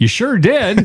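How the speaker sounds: put-on, very high, over-eager, enthusiastic nurse voice. Retelling a nurse's reply after waking up covered in vomit: imitating an enthusiastic nurse. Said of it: "With, like, all the enthusiasm in the world".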